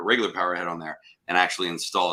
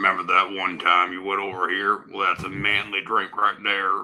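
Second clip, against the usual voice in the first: imitated Western movie actor voice. Acting out a commercial about a pink drink: imitating a Western movie actor. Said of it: "Where's that from, that voice?".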